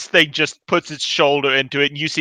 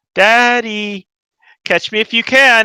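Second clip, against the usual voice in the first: put-on high small girl voice, calling out; 8 semitones higher, 3 dB louder than usual. Narrating a scene, a little girl calls from down the hall, little girl voice. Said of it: "you hear a little girl's voice from down the hall".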